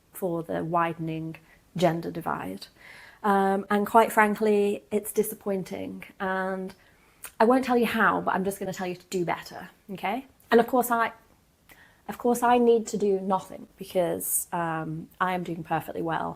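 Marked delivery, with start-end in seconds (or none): none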